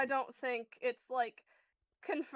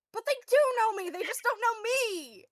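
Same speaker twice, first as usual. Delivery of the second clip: exasperated, very high-pitched, raised frustrated voice; 9 semitones higher, 5 dB louder than usual. A character argues back at a companion holding him back: very frustrated. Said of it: "He sounds very, very frustrated".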